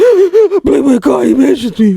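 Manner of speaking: very high, drawn-out, blubbering bawling sob. Retelling a streamer's reaction to a mention: imitating someone bawling.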